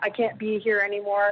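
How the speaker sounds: put-on panicked, pleading tone. Retelling a late-night phone call from a hospital: imitating a panicked plea. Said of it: "in a panic".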